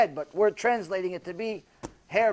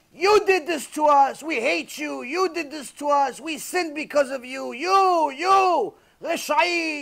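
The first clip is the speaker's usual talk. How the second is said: mock angry yelling, higher; 7 semitones higher than usual. Retelling how millions of souls yelled blame at her: imitating souls yelling. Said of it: "Millions of neshamot yelling at her".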